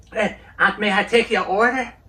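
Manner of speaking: high, shrill, deliberately bad voice. Act out your fantasy of him working at McDonald's, in a terrible George W. Bush impression. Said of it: "I do a terrible impression".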